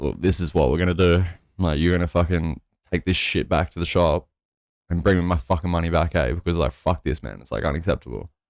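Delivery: plain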